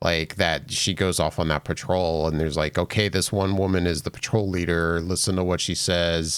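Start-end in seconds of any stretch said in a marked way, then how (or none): none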